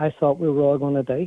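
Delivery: plain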